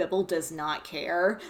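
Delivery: ordinary talk, nothing marked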